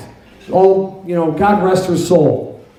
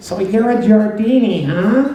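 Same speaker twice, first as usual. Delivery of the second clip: small, sweet-toned little voice; 3 semitones higher than usual. Recalling a kid who headlocked him in a school hallway, little sweet voice. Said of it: "in that little sweet voice".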